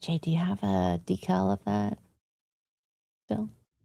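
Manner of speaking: very soft, very quiet, hushed voice. Asking jay a question while the group talks about merch, quiet and hushed. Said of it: "Just quiet".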